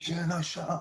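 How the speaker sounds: put-on quiet American accent. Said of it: "he had this American accent".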